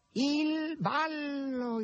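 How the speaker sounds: very high, piercing, shrill cat-like shriek. Narrating a novel, the cat announces the ball in the dark: shrill high-pitched shriek. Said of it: "strillò il gatto con voce acuta".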